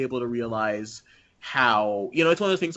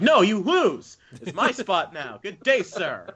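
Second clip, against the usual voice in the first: acted, high-pitched, stretched-out screaming; 7 semitones higher than usual. Imagining someone screaming at everybody: imitating someone screaming. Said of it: "he's just screaming at everybody".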